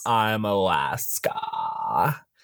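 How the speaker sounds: long vocal fry, every word dragged out slowly. Imitating a drag queen narrating an audiobook: Alaska's long drawn-out voice. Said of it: "Alaska's long, drawn out voice".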